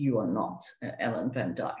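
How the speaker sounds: put-on very low, deep, heavy, thick German accent. Retelling what the DS said at the end of the race, in a thick German accent. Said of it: "in his very thick German accent".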